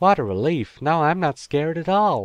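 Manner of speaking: high-pitched put-on West Country accent. Voicing a U.S. child's reply to a parent, in a West Country accent. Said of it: "Why were you doing that with a West Country accent?".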